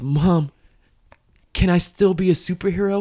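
mock shaking, trembling, high, very slow voice. Retelling a scene where a kid asks his mom a question: imitating a shaking voice. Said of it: "you hear his voice shaking".

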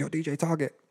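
offhand, casual, high-pitched delivery. Retelling what a man said after opening the door, high-pitched voice. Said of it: "high-pitched voice".

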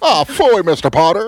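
shrill, very high, loud, drawl-free exclamation. Doing a line from the movie: Jimmy Stewart impression. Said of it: "Who hasn't heard a Jimmy Stewart impression".

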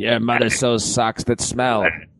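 put-on heavy smoker's voice. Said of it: "had smoked a carton of cigarettes".

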